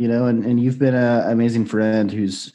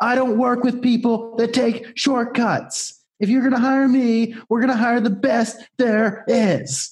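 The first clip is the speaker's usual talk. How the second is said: imitated yelling, higher pitch; 13 semitones higher than usual. Retelling what was said to a friend in his living room: imitating his own yelling. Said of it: "and then I just started yelling".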